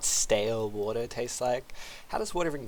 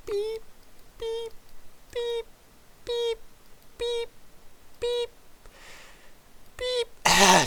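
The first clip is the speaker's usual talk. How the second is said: very high, very slow, breathless drawn-out beeps. Making a long string of beeping sounds, out of breath. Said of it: "I ran out of breath there".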